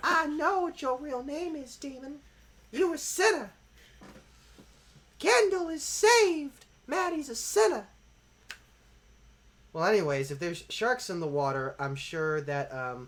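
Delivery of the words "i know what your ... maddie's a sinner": put-on fiery preacher voice, very high, loud. Voicing a stuffed baby shark as a preacher: zealous Southern Baptist preacher voice. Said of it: "the persona of, like, a really zealous preacher, p-, like, Southern Baptist preacher".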